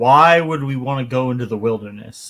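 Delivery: ordinary delivery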